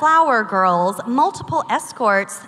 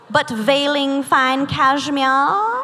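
mocking mid-Atlantic accent. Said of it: "I don't know what accent this is".

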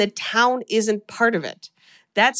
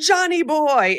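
put-on, high-pitched German accent; 5 semitones higher than usual. Recounting a scene, the speaker voices a little boy at the church door: German accent. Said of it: "in a German accent".

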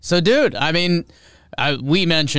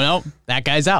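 plain

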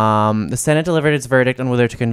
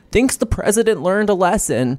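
higher voice, wavering and flowing up and down; 8 semitones higher than usual. Quoting a senator on a TV clip: Susan Collins impression. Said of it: "that was my Susan Collins impression".

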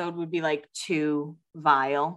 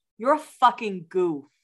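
put-on boozy, drunk-sounding voice with a Boston accent; 3 semitones higher than usual. Doing the speaker's brother's voice when he's drunk, mock-drunk boston accent. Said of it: "drunk in his Boston accent".

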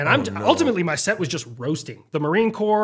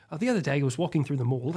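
light, put-on British accent; 3 semitones lower, 7 dB quieter than usual. Showing the light British accent used for the United Kingdom: light Ewan McGregor British accent. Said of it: "it's very light and it's very Ewan".

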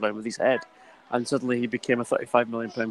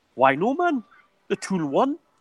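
clumsy, bad Geordie accent, sing-song and swooping; 8 semitones higher than usual. Retelling a footballer's reply to a nightclub bouncer: bad Andy Carroll Geordie impression. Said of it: "sorry for the bad Geordie accent".

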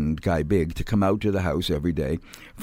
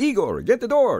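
vampire-style voice, pitched very high; 3 dB louder than usual. Showing how an actor had to read his line, the Count's voice. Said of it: "he had to talk like the Count".

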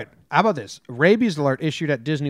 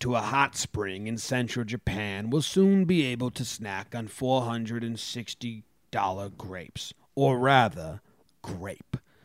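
put-on nature documentary narrator voice; 3 semitones lower, 6 dB quieter than usual. With others listening who will remark on your voice, speak in a Planet Earth guy voice. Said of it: "Sounded like the Planet Earth guy".

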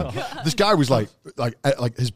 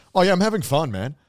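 put-on, strong American accent; 5 semitones higher than usual. Retelling what a dancer said after hours of filming, in a strong American accent. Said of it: "in like the most American ass accent was like".

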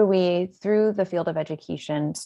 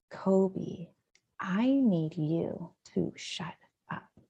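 whispered, very slow, deliberate and hushed; 9 dB quieter than usual. Retelling how a child whispered to a stuffed animal: imitating a whisper. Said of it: "he then whispers to a stuffed animal".

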